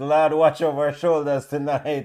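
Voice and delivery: ordinary talk, nothing marked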